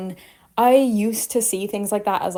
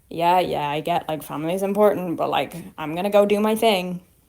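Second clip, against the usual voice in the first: put-on offhand, dismissive teenage voice; 3 semitones lower than usual. Retelling own past attitude about family: imitating her teenage self, dismissive. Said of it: "teenagery energy where it's like".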